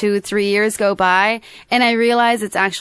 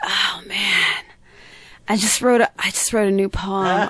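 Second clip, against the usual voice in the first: mock-depressed tone, much slower. Retelling a phone call from a depressed man, acting out someone depressed. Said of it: "he's super depressed".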